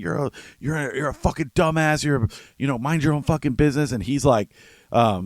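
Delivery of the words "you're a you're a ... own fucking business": heated, mild angry yell. Retelling a neighbour's insult from a quarrel: imitating someone screaming. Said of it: "And she's screaming".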